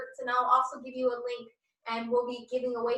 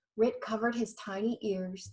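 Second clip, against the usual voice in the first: plain reading voice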